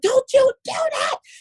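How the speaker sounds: very high-pitched voice. Retelling what a woman told her, imitating a high-pitched voice. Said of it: "She had this real high pitch".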